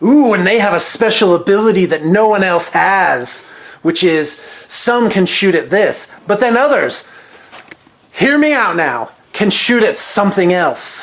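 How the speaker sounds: put-on amazed, hyped tone.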